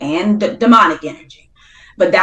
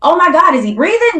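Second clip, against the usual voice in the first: frantic, alarmed, panicked worry, pitched up; 10 semitones higher than usual. Retelling checking whether someone was breathing: retelling own panicked words. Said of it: "I'm freaking out 'cause I'm like".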